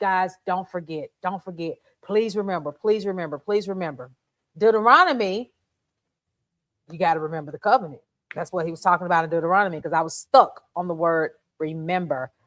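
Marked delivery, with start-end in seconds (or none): 0.0-4.1 desperate, pleading, repeated begging. Retelling a plea to the people not to forget: imitating someone begging. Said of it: "Moses is begging".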